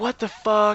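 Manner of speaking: mock sudden half-scream, high and mild. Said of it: "she's screaming, like".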